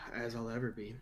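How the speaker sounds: weary, low, very quiet murmur. Asked if ready with forty-five seconds to go, answering, tired. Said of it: "You sound tired".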